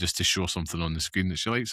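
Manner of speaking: plain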